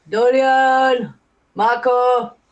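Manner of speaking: loud hollering shout. Standing at a closed door, calling for a character inside: shouting. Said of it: "start shouting Dolian at the door?".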